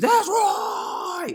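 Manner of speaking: fierce, hard, spit-flying scream, pitched way up. Describing an infiltrator in the camp: imitating someone screaming. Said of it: "he screams".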